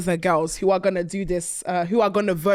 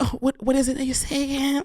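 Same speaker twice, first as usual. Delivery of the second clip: mock nervous voice, pitched higher; 6 semitones higher than usual. Retelling what Tia said when it was her turn: imitating Tia's voice. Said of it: "she goes".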